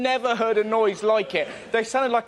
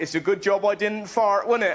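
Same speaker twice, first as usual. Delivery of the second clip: usual speaking voice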